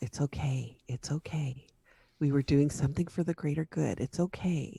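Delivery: soft reassuring whisper. Leaning over in character to reassure Cecil in class: whispering in character. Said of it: "I kinda lean over and whisper to Cecil".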